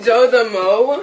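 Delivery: loud yelling, shouting. Answering a question on a show, too loud: yelling into the mic. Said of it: "Why are you yelling in the mic?".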